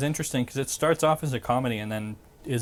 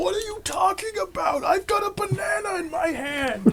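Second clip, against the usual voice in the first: very high-pitched character voice. Doing a Super Dave impression while others talk about Arrested Development: Super Dave voice. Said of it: "That's a pretty good Super Dave".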